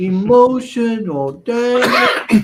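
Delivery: very high, shrill, loud, belted-out delivery. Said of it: "See, you got it".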